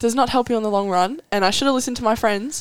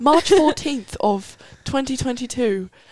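bad British accent, higher; 3 semitones higher than usual. Starting the story of a knee injury, in a horrible British accent. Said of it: "It's a horrible accent".

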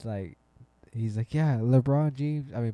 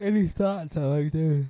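pitched-up words pushed through a yawn; 6 semitones higher, 4 dB louder than usual. Asking for thoughts on a player before moving on, yawning while talking. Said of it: "Sorry, yawning".

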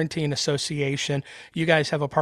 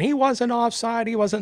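high-pitched screamed voice; 8 semitones higher than usual. Retelling a cartoon where parents react to an offside call: imitating people screaming. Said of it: "everybody starts screaming".

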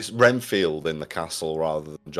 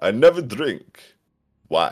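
put-on classic old-movie vampire accent, swooping and raised; 5 semitones higher, 6 dB louder than usual. Discussing how a vampire speaks, quoting one of his lines: imitating a vampire's accent. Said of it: "What does he say at one point?".

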